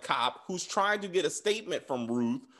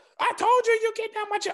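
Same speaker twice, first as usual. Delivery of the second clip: put-on shrill, very high, loud yelling; 6 dB louder than usual. Retelling a scene where a man yells in front of a cop: imitating someone yelling. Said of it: "he's screaming and yelling at".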